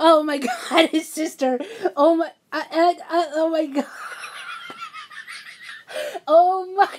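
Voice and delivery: high, swooping talk breaking up with laughter. Telling viewers some news, breaking into laughter, laughing while talking. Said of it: "Sorry, I'm laughing".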